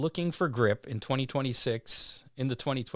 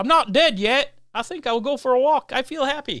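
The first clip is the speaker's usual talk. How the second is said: very high, shrill, loud, botched English accent; 13 semitones higher, 10 dB louder than usual. Quoting a movie line for a listener to guess, in a failed English accent. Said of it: "I can't do an English accent".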